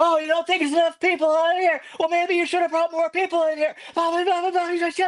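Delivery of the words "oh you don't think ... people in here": mock very high, shrill, screeching, screaming rant. Retelling how the show's producer yelled at a comic: imitating someone screaming. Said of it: "starts screaming at the comic".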